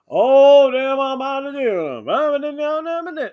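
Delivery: laid-on drawl, very loud, slow, high, "do" stretched. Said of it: "starts talking really blackish".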